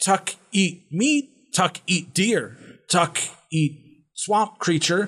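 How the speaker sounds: slow, high, drawn-out, broken, weak goblin voice. Game master voicing a chained goblin answering the party, in Tuck goblin voice. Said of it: "It is a goblin, but it is about twice your height. / Probably about 7 or 8 feet tall. Ooh. Oof, and, that's one big boy. His arms, well, they're currently like weak and the skin kind of clings to his".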